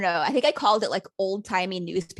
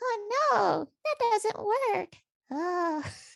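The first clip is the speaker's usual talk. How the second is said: very high, small, tiny put-on squeaky voice; 13 semitones higher, 3 dB quieter than usual. Describing what they do when puzzle pieces don't fit, in a tiny little voice. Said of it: "I start doing this like little voice that's like".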